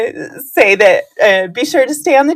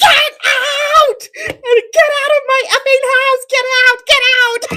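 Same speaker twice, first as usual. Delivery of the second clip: mock shrill, very high, top-of-the-lungs scream. Retelling throwing workers out of the house: imitating own screaming. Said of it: "I just started screaming".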